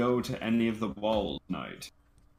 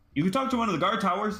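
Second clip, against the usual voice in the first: put-on high, fast, eager young blurt. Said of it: "pops up and he's like".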